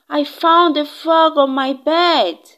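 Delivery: loud, high-pitched yell full of excitement. Narrating a story, the child comes home from school and calls to Mom: yelling out. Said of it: "is when I yelled out".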